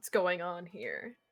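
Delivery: stern, hard-edged tone. Voicing guards who approach from behind and question the party; stern guards' question. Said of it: "rather sternly ask".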